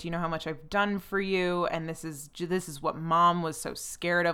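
plain

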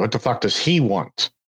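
ordinary talk, nothing marked

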